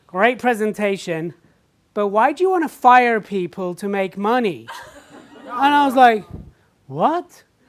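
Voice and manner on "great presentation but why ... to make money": attempted, put-on American accent. Retelling an audience member's question after the speaker's presentation, put-on American accent. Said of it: "I'll do my best to do an American accent".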